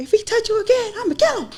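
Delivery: tough-sounding, really high-pitched voice. Retelling what he told her with the butter knife, in a really high-pitched voice. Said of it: "Really high pitched voice".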